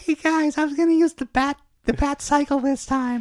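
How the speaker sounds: very high-pitched, sweet, nice-sounding voice. Acting out Batman planning the fight with villains: high-voiced nice Batman. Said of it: "Batman actually talks nice, and he's got a high voice".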